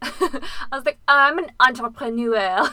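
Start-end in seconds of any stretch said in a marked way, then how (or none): 1.1-2.7 very loud, put-on French accent. Retelling answering a French person about work: fake French accent. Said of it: "you don't have to do it in an accent".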